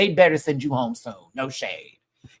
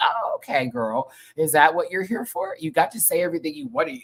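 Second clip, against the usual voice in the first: put-on offhand, easygoing, nonchalant, unraised casual tone; 3 semitones higher than usual. Recapping what a woman said, copying her tone: mock-nonchalant tone. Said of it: "Her voice is not raised. She's just nonchalantly".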